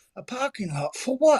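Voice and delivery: bad medieval English accent. Joking about medieval England branding for the metaverse, terrible medieval English accent. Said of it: "that was a terrible medieval accent".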